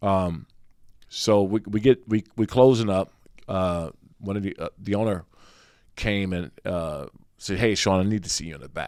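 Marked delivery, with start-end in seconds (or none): 7.6-8.9 put-on school-principal tone, much faster. Retelling the owner calling him to the back at closing, mock school-principal tone. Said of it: "You said that like he's a school principal".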